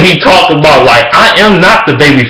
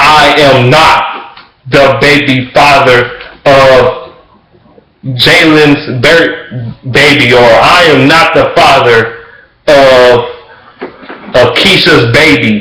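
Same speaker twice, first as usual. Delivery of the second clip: very slow, stumbling, read-aloud delivery. Imitating talk-show guests reading a card: imitating a guest speaking slowly. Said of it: "They'll say it all slow".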